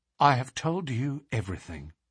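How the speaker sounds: ordinary delivery, nothing marked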